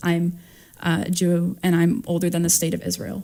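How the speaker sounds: normal talking voice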